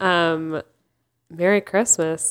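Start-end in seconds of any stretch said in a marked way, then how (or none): 1.3-2.3 flat, deadpan delivery. Wishing the other speaker a merry Christmas: deadpan. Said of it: "You're so deadpan".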